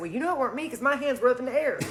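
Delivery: ordinary delivery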